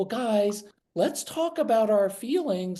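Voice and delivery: sugary, overly sweet, high voice. Contrasting an authoritarian approach, the speaker addresses kids in a really sweet tone. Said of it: "the really sweet tone".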